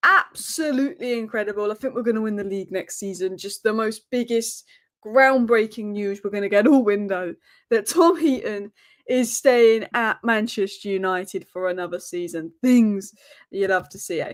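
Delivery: ordinary talk, nothing marked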